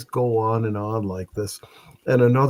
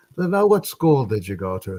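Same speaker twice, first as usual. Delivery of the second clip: plain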